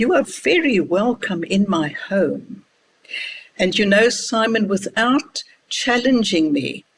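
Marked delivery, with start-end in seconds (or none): 0.0-2.6 condescending, put-on graciousness, very patronizing. Retelling what you said to the mama over coffee, in a put-on patronizing voice. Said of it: "in my most patronizing voice".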